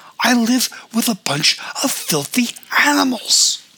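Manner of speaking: very high-pitched shrieking scream. [name] reacts as Keats squirts against their couch, screaming. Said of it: "[name] screamed".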